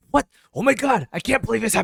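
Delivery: shrill, loud, angry outburst. Comparing dubs, the speaker imitates the English version sounding angry. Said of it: "he was angry and we could hear him".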